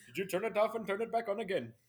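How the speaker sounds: very high-pitched Indian accent. Podcast co-hosts joking about call centers, playing a call-center worker in an indian call-center accent. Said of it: "And only do Indian accents?".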